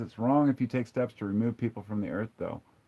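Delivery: ordinary delivery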